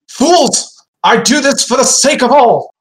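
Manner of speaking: furious shouting. A narrator voices a winged figure shouting at the group: raging shout. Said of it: "And he shouts in Celestial".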